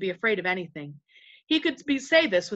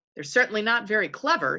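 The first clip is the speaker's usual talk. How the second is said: ordinary delivery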